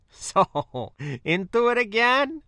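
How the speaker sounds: very high, drawn-out, slow, amused and chuckling. Walking back inside with the narrator, a man asks a question with a chuckle. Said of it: "he asked with a chuckle".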